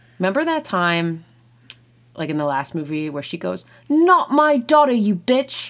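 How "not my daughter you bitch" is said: put-on British accent, loud, slow and drawn out. Quoting a woman's line from the last movie to a friend: british accent. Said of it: "Is that a good British accent?".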